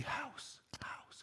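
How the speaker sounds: hushed, very quiet, barely audible whisper. Retelling feeding her the answer during the show, whispering quietly. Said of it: "I'm whispering quietly".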